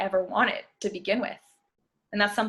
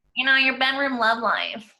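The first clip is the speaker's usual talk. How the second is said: put-on nerdy voice, much higher pitch; 4 semitones higher, 4 dB louder than usual. Podcast host teasing a co-host: bad Steve Urkel impression. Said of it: "This sounds like a bad Steve Urkel impression".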